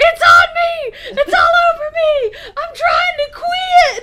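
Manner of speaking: very high, loud, stretched-out shrill screaming. Imitating a friend's reaction to trash spilling on him: imitating someone screaming high-pitched. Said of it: "he was screaming like a bitch".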